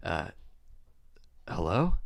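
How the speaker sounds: startled, surprised, caught-off-guard tone. Retelling a phone call picked up on the third ring: imitating Kieran sounding startled. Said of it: "he just sounds kinda startled".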